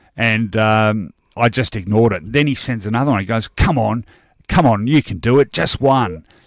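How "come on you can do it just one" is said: mock-sarcastic taunting tone, slower. Speaker retelling a message someone sent, imitating a sarcastic taunt.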